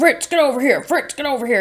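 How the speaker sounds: high-pitched yelling, calling out. Retelling how a man called his dog away from her lap: imitating someone yelling. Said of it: "He's like yelling at the dog".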